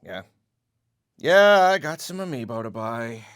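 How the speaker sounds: said with a sigh. Ending a game review video, the reviewer signs off, sighing. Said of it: "*sigh…*".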